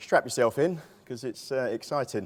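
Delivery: dry, tongue-in-cheek, ironic, sarcastic tone. Opening a talk on HMOs, calling the topic exciting: sarcastic. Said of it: "If you can pick up the sarcasm there".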